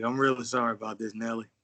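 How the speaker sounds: overly smooth voice. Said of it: "he said it too smooth".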